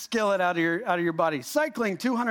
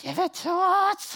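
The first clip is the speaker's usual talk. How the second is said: put-on creature voice with swooping pitch swings; 5 semitones lower than usual. Acting out what their heart says at ten at night, in Gollum voice. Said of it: "it's not in that voice. It's not, I don't really have Gollum in me".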